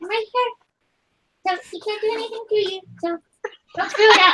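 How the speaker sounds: close-up, high half-whisper. Playing a fairy holding a companion's shoulder in a game: half-whispering in her ear. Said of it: "I'm just gonna whisper in her, in her ear".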